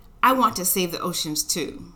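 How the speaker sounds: ordinary delivery, nothing marked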